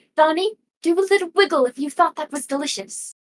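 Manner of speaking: speaking in a whisper. Speaking in character into a jar: whispering. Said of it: "I'm gonna whisper into the jar".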